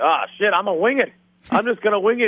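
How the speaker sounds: high, bad Irish accent impression.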